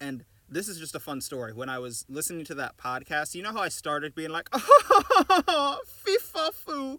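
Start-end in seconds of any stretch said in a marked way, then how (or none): 4.5-7.0 put-on very high, very loud, stuffy aristocratic British accent. Showing the accent all Americans can do: a stuffy British aristocrat accent. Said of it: "like stuffy British aristocrat accent".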